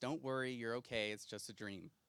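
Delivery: very tired, low, half-asleep murmur. Retelling a brother's nightmare comfort at night: imitating a very tired voice. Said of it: "in a very tired voice".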